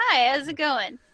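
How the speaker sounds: very loud, burbly, cheerful delivery. Showing how he said hello, Mr. Rogers-like burbly cheerful voice. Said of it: "little, like, burbly, like, cheerful".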